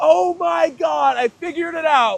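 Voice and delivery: very loud, high, thrilled, excited shrieking scream. Retelling a moment of sudden realization, imitating his own screaming. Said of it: "I was literally, like, screaming".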